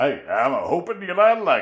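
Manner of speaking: put-on folksy backwoods hillbilly accent. Repeating a listener's typo for a laugh: put-on hillbilly voice. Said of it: "'cause it makes him sound like a hillbilly".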